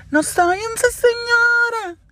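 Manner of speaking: very high hollering shout, señora drawn out. Retelling a friend yelling with a glass raised: imitating a friend shouting. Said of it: "el vaso arriba y gritaba".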